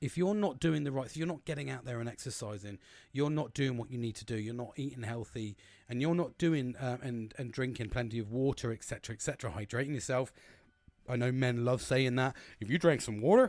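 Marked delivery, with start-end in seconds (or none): 12.6-13.5 put-on very loud, sudden, high-pitched American accent. Speaker quotes a common line men say, American accent. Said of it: "I went into an American accent then".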